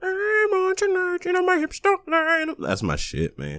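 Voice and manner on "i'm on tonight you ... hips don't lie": very high-pitched put-on cartoon puppet-frog voice. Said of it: "where she sound like Kermit the Frog".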